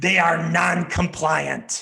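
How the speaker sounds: scary, spooky, menacing voice. Reading the contrasting 'they' statements aloud, in a scary voice. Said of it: "read the they statements in a scary type of voice".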